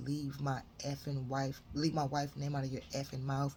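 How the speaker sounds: usual speaking voice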